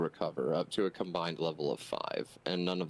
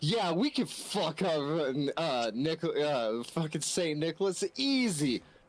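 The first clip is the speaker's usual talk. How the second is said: high, cocky bro voice with bravado. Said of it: "it's like".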